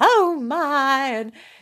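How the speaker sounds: put-on, high southern belle drawl, my drawn out. Recalling a dad reading novels aloud in character, southern belle voice. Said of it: "he would do the woman's southern belle".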